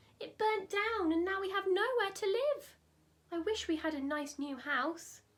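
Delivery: high, shrill, squeaking little mother mouse voice. Reading a story aloud as the mother mouse answers: squeaky mother mouse voice. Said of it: "squeaked the mother mouse".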